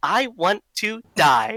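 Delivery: robotic machine voice as if over comms. Player speaking in character over the comms, Riz's robotic comm voice. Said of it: "Riz's robotic comm".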